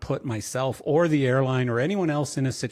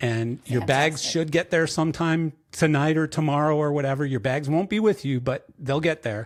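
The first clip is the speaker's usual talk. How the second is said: usual speaking voice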